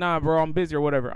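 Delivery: plain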